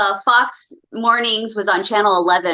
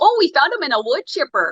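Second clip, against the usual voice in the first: put-on played-up Duluth-style Minnesota accent, pitched up; 5 semitones higher than usual. Quoting a line in the Minnesota accent under discussion: put-on Minnesota accent. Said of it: "the Minnesota, Duluth, Fargo, whatever accent".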